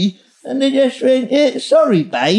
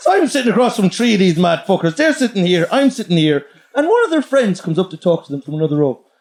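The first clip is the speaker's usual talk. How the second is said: plain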